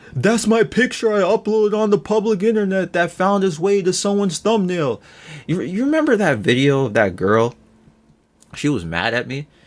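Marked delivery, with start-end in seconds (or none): 0.1-5.0 high, griping, whiny moan. Retelling what people complain about with thumbnails: mocking people complaining. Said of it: "bitching about".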